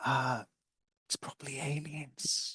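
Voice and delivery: slow, hushed whisper kept under the breath. Telling the others in character that it's probably aliens: whispering. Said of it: "I'll whisper them".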